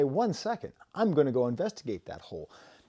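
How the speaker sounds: ordinary talk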